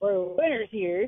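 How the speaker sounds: put-on Southern accent. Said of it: "I got a Southern accent".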